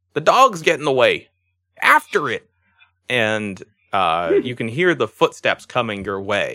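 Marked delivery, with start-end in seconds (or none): 0.1-2.5 goblin voice shouting, higher and louder. Voicing a goblin guard chasing an escaping dog: goblin shouting. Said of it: "The goblin, you hear, uh, shouts".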